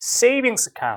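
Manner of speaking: stress placed on the word 'savings'. Korean lesson on noun-noun compounds: stress on 'savings'. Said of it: "명사, 명사는 둘 다 강세를 주는데 보통 경우에 더 큰 강세는 앞에 와요 ... 이렇게 보통 하죠".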